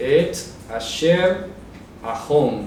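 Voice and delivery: et asher ahom, slow, split syllable by syllable.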